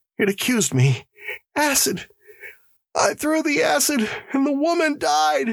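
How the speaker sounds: very high, shuddering, rising terrified wail. Narrator reads a prisoner telling the warden what the voice said, wailing in terror. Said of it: "long, shuddering wail of terror".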